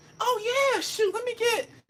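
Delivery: eager female voice, very high.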